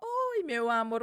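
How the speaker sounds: put-on calm, serene, gentle, soothing voice. Retelling what a nurse said on waking: imitating a nurse's serene voice. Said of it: "uma voz serena".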